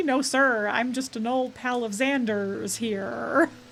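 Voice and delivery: clumsy, very bad, slow American accent. Recounting a show where a British character fakes an American accent, very bad American accent. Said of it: "a very bad American accent".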